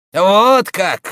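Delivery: loud, high, scornful, disdainful, contemptuous tone. A man answers a priest who was once a soldier, contemptuous. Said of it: "с презрением заметил Роден".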